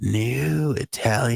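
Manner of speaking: put-on smooth, silky old-school radio announcer, slight creak. Offering a better take on an old ad line: silky smooth announcer voice. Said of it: "I could make that more silky and smooth".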